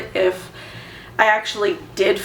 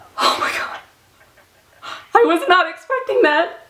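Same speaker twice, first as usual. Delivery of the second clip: very high voice, overcome, emotion spilling over; 10 semitones higher than usual. Hearing on the phone that test results are positive: very emotional. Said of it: "I just got really emotional".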